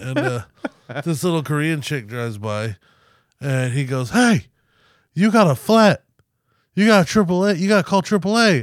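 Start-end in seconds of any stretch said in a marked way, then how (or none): 4.1-8.6 put-on loud shout, louder, much higher. Retelling what the tow truck guy called out across the parking lot, imitating a loud shout.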